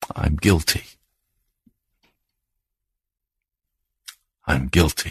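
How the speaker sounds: hushed, very soft whisper, close to tears. Narrating a prisoner alone in his jail cell, speaking in a very soft whisper. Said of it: "very softly he whispered".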